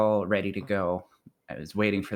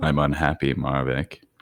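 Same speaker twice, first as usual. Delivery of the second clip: loud, groggy, bleary just-woke-up voice; 5 semitones lower, 5 dB louder than usual. Greeting another speaker by name: just woke up voice. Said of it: "That's my just woke up voice".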